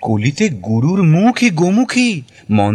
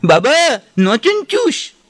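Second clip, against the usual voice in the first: mock nasal shriek, much higher pitch; 9 semitones higher than usual. Telling a story about a girl who suddenly cried out, imitating a nasal scream. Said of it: "মেয়েটা নাকি সুরে চিৎকার করে উঠল".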